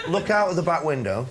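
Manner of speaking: ordinary talk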